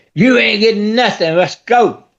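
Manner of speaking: mild, half-hearted yell in a cop's voice. Retelling a cop refusing a wife water: imitating a cop screaming. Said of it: "that cop come in here screaming".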